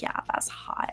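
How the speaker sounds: put-on breathy, whispery baby voice, breathed out. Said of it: "her little, like, baby voice".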